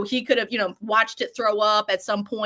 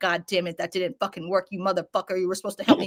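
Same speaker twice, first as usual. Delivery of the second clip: put-on furious creature voice; 3 semitones lower than usual. Voicing a trapped creature staring at its dead helper: imitating a super pissed creature. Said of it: "super pissed that he just did this shit".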